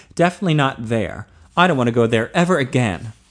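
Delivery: ordinary delivery, nothing marked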